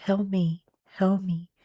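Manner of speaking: hushed, calm, very quiet, even voice. Imitating a voice calling for help in a clip: imitating a calm voice. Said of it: "why would it say it so calmly".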